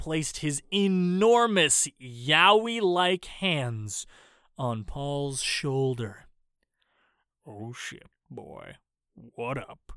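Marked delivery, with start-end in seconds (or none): 7.5-9.9 very quiet, soft, sultry, seductive murmur. Reading a funny story, the butter god greets Paul: sexy Morgan Freeman voice. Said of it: "in the most sexiest Morgan Freeman-like voice".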